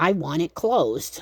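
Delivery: firm, stern, slow, deliberate parent voice. Holding the door shut and retelling what they said, in a loud, stern mom voice. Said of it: "in my loud, stern mom voice".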